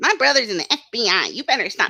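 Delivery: taunting, mocking troll voice. Mocking a troll account's claim, in a new voice for troll accounts. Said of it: "That's my new voice now for troll accounts".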